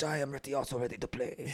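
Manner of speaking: soft, put-on Japanese-accented English.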